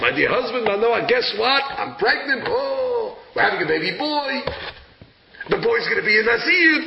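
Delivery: thrilled, all-excited, happy delivery. Retelling a bible story, a wife tells her husband manoah her news, mock-excited. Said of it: "She's all excited".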